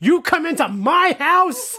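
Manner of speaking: mock very high, slow, drawn-out shouting. Retelling a man yelling at Franco about the Valar; retelling a yell. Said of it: "He's like yelling at Franco".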